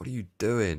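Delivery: high, loud mock scream. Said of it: "or just screaming, going".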